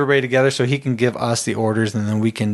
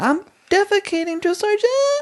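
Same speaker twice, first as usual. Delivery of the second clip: put-on voice pitched much higher. Retelling what a man said to a drill sergeant, imitating a high voice. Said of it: "his voice that high?".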